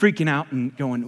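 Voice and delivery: ordinary talk, nothing marked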